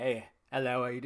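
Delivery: put-on deep Australian accent. Recalling introducing Steven to people, the speaker imitates his deep Australian accent. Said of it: "he had a deep Australian accent".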